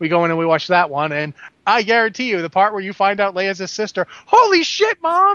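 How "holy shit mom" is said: put-on very high-pitched, squealing child's yell. Imagining the same kid reacting during Return of the Jedi: imitating a kid screaming. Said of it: "this kid gets up and screams".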